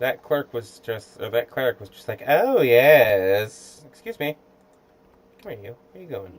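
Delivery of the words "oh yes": very loud, sultry, suggestive, drawn-out voice. Retelling what a game cleric just said: imitating a sexual-sounding cleric. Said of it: "why is that cleric so sexual?".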